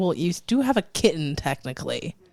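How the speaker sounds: ordinary talk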